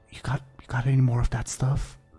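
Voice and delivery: hushed whisper under the breath. In a roleplay, a visitor looks around and speaks to Blaybeard, whispering. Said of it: "like whispers to you".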